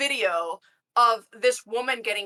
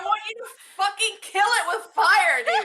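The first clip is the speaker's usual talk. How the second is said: put-on panicked scream, higher; 10 semitones higher than usual.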